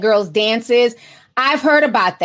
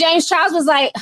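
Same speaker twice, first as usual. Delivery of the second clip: usual speaking voice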